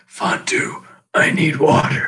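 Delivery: really thirsty, parched-sounding voice. Imitating how a character from Thirsty Planet used to sound: thirsty voice. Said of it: "She used to sound really thirsty".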